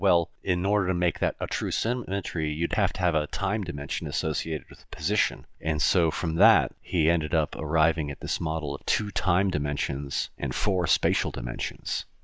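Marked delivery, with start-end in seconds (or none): none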